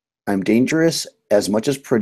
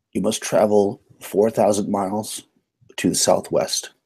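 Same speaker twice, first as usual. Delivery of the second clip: usual speaking voice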